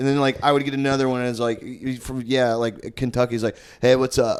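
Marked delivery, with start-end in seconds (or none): 3.8-4.4 put-on Southern California surfer bro voice. Retelling what frat guys said showing their IDs: imitating a Brody from Point Break bro. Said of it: "talking like fucking Brody from Point Break".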